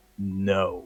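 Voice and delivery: mad, angry voice. Voicing a shopkeeper who slams a fist on the counter: voicing an angry refusal. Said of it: "he gets all mad, and he slams a fist".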